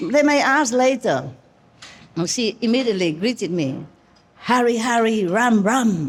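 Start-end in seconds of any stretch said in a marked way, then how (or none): 4.4-6.1 slower, very powerful put-on voice. Act out how she immediately greeted you, imitating a very powerful voice. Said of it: "Very powerful voice".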